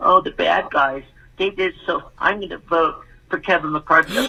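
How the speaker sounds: acted-out high whiny sarcastic condescending tone. Mocking someone who gets on TV: mock whining, condescending voice. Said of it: "are you talking sarcastically in a, in a whining, condescending voice".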